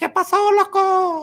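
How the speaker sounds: very high, very slow, swooping, sing-song drawl. Imitating a man who lived in the family basement, in a high-pitched voice. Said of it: "He had a high pitched voice like that".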